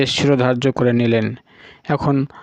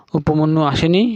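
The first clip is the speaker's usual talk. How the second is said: plain reading voice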